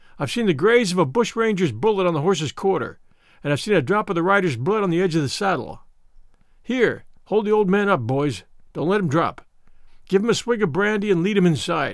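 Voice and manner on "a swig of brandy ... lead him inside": ordinary delivery, nothing marked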